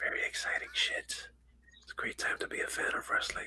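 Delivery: hushed, very quiet whisper, held-back enthusiasm. Talking about being excited for an upcoming wrestling event: whispering. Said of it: "Why are we whispering?".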